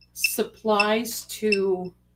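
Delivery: very slow, careful enunciation.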